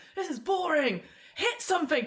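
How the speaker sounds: high, loud, heckling shout.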